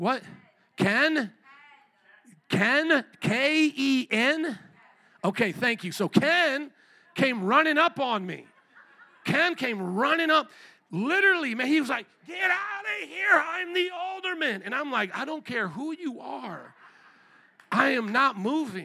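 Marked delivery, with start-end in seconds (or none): 12.3-14.6 put-on scream, high-pitched, loud. Retelling how Ken came running up on him, imitating Ken screaming. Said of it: "he's screaming this close to me".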